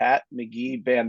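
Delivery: very slow, drawn-out delivery.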